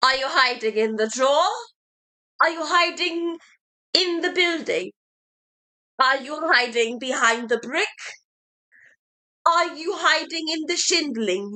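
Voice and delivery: put-on Victorian ghost child voice. Performing a monologue as a Victorian ghost child: Victorian ghost child. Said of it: "I will be interpreting the Victorian ghost child looking for his mother".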